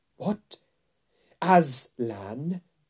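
sudden, loud exclaiming outcry. Reading a story aloud, the narrator voices the queen hearing Edmund's news: crying out. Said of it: "cried the queen".

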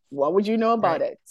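mocking, sarcastic, cutting tone. Talking about patients' research, sarcastic. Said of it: "Sarcasm, by the way".

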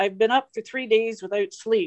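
normal talking voice

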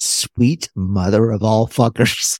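straight face, fighting and stifling a laugh. Speaker explains a phrase and says it aloud: holding back laughter. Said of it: "trying to say it without laughing".

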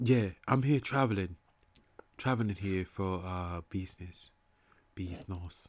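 put-on British accent. Talking about someone from across the pond, the speaker imitates a british accent. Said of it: "my boy from over the pond".

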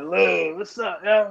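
rough, raspy, high-pitched, drawn-out voice. Retelling how a sister greeted him: imitating sister's raspy Baltimore accent. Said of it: "hers was even raspy".

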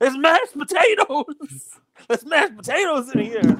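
put-on, very high, sloppy drunken yell. Retelling what a man yelled back to his boys: retelling a drunk yell. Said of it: "he pops his head up drunk and he yells back".

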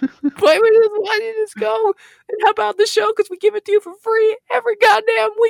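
shrill, high, very loud, fake wailing sobs. Pretending to beg listeners to leave reviews: mock crying. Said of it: "Stop crying".

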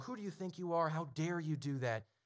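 half-shouted, mild scolding tirade. Describing a viral recording of a man screaming at men, imitating someone screaming. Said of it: "and he's screaming".

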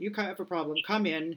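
barking, commanding parade-ground sergeant major voice. Illustrating a cut-and-dry, rational model of help: Sergeant Major voice. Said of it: "I'm using my Sergeant Major voice right now".

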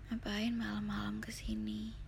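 gentle, soft, smooth and hushed voice. A girl questions Jimmy, who has come to see her, asking softly. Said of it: "Tanyanya pelan".

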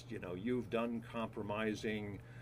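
ordinary talk, nothing marked

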